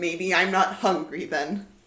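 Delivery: sulky, petulant fairy voice. Voicing a fairy who crosses his arms at the others: sulky fairy voice. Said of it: "He crosses his arms and he looks at you and he goes".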